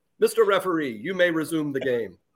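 overly polite, genteel, refined tone. Imitating a player politely trash talking in a game: Bediako voice, overly polite. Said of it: "Why do I talk like it, like that's his accent?".

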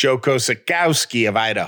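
put-on Jersey-ish accent.

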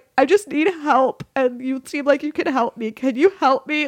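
mock weepy, high, sobbing crying voice. Recalling a first voicemail left for a psychiatrist, imitating own sobbing. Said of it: "me sobbing before I even knew her".

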